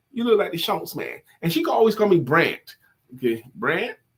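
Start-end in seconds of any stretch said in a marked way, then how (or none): 0.1-1.2 put-on accent of the American South. Retelling what his grandmother told him as a kid, in a Southern accent. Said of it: "she had a Southern dialect".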